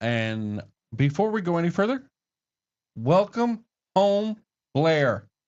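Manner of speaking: full-voice yelling. Welcoming blair home: yelling. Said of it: "Why are you yelling".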